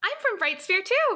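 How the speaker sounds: unusually high voice. Asking an in-character question in a game scene, unusually high voice. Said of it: "I don't know why my voice was that high".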